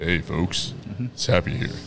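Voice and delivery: hushed, whispered, breathy radio-announcer voice. Asked whether that's his radio voice, he greets the folks in his radio voice. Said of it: "Your radio voice?".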